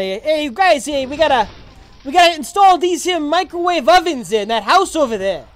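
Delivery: put-on New Jersey accent. Asked about their jersey accent, the speaker shows it off: jersey accent. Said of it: "My Jersey accent?".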